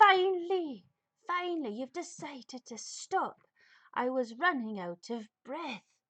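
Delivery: not-quite-human, bear-like creature voice. A game master voices a mysterious voice calling to the player who stopped, not-quite-human voice. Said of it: "it's not quite human, but it's human enough".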